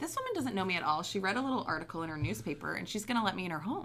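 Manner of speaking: ordinary talk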